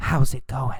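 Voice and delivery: soft, very quiet whisper, barely there. Teaching the difference between yelling and whispering, showing a whisper: whispering. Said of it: "Or did he whisper".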